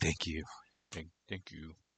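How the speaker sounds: barely audible, hushed, small little bird voice. Retelling what the bird said after getting a nut, imitating Rhett speaking very quietly. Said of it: "She said it very quietly".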